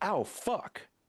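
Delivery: mock very high, sharp, sudden yelp. Retelling getting a splinter while wiping wood: retelling own yell. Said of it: "And I just yelled".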